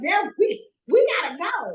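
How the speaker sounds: mock very high, stammering, panicked voice. Retelling a moment of panic to a spirit guide: retelling own panicked words.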